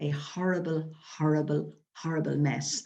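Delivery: ordinary delivery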